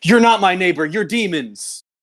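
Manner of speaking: ranting, screamed delivery. Retelling what a guy replied in an argument: imitating someone screaming. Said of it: "the guy started screaming".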